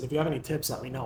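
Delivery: put-on heavy sarcastic, half-joking delivery. Retelling a joking remark made at a first meeting: imitating own sarcastic remark. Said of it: "I was real sarcastic".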